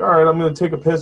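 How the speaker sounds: put-on mock nonchalant, casual tone. Imitating a movie character calling for Heather: imitating a nonchalant character. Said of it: "so nonchalant about being in this very odd house".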